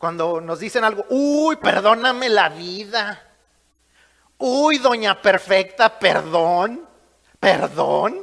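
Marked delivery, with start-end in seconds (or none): 1.1-8.2 loud, slow, heavily sarcastic delivery. Showing how people answer back with sarcasm: acting out sarcasm. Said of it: "El sarcasmo".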